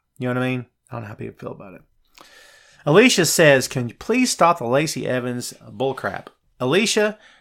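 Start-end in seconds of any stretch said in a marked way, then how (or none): none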